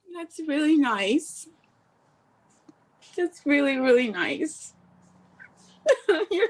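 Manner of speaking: high, tearful words forced out through ugly crying. Being offered a meeting with an agent and a manager, ugly crying while talking. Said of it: "I'm ugly crying right now".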